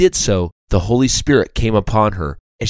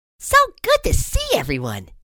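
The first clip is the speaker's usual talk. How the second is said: very high, thrilled, excited sing-song exclamation. Narrator voicing Sally greeting everyone, exclaiming excitedly. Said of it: "she exclaimed excitedly".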